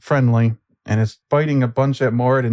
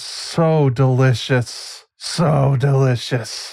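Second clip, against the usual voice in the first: slow, vile, disgusting monster creature voice. On the creature's turn, the narrator voices it in a disgusting, vile voice. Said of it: "in this disgusting, vile voice".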